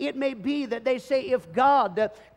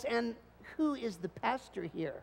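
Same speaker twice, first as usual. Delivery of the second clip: very quiet, mock sneering voice; 11 dB quieter than usual. A pastor retelling how church visitors ask who the pastor is, mimicking a sneering voice. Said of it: "ask this question with a sneering voice".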